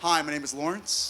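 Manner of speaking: smooth, charming, suave leading-man voice. Performing an audition line as the world's most handsome man: acting as world's most handsome man. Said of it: ""World's most handsome man."".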